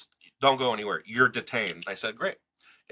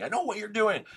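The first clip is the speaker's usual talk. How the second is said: put-on scream, pitched very high; 14 semitones higher than usual. Recounting to a listener how another person shouted at them during a confrontation, acting out those words, imitating someone screaming. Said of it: "screaming at me".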